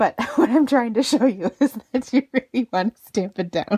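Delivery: laughing while talking. Showing how to stamp down firmly on cardstock, laughing while talking. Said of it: "I'm making myself giggle".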